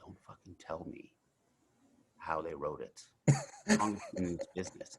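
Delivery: hushed whisper under the breath. Retelling what a man came over and whispered to him; whispering. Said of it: "he whispers to me, he goes".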